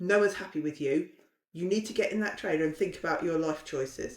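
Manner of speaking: plain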